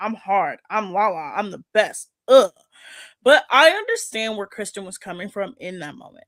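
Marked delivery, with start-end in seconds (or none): 0.0-2.1 slow, overdone, put-on tough-girl bravado. Mocking a reality cast member for trying to sound tough: mocking imitation of acting tough. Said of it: "trying so hard to be like".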